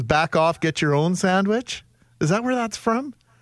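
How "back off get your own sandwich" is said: ordinary talk, nothing marked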